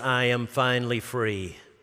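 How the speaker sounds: flat, level, unvarying monotone. Retelling what a man told him in his office, imitating a flat monotone. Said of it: "in a monotone voice".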